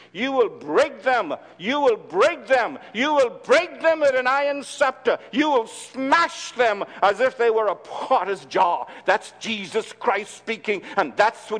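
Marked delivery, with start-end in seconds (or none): 0.2-8.9 anger driving every line. Reading a scripture passage about judgment on sinners: angry. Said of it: "I'm angry".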